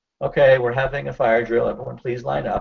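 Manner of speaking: normal talking voice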